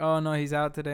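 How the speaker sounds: ordinary delivery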